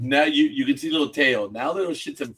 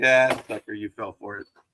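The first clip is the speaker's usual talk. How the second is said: put-on taunting tone; 3 semitones lower than usual. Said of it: "I'm like".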